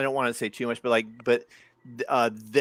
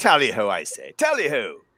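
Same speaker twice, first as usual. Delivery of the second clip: put-on British accent; 4 dB louder than usual. Joking with the others in a put-on british accent. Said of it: "the British accent again".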